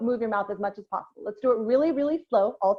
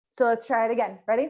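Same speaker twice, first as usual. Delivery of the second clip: usual speaking voice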